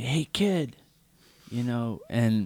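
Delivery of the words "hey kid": acted-out high, shouted call. Retelling how a guy yelled through the open window: imitating a guy yelling. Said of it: "I hear this guy yelling".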